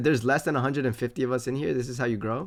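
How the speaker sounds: plain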